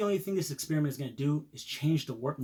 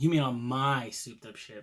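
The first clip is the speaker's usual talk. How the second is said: mocking, sarcastic, echoed repeat. Rehearsing a scene line as directed, sarcastically.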